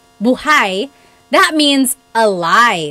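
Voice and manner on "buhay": buhay said with stress on its second syllable. Teaching how stress changes a word's meaning: stress on second syllable of buhay. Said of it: "the emphasis is on the second syllable".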